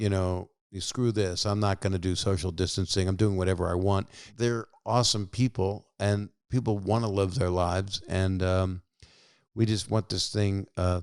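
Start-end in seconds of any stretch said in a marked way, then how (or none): none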